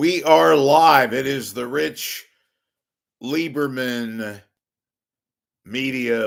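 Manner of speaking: loud, theatrical, very very dramatic delivery. Opening the live rich lieberman media show, very, very dramatic delivery. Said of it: "But why am I talking like this?".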